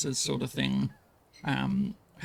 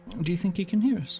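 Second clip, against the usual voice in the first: light voice, a touch higher in pitch; 5 semitones higher than usual. In a tabletop game, a player's character speaks in a softer tone. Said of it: "She sort of says in a softer tone".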